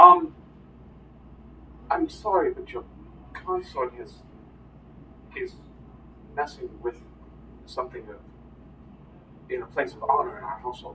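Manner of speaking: half-whispered, polite, complaining tone. Voicing the father excusing himself: voicing the father. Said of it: "your father goes".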